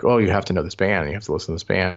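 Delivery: ordinary talk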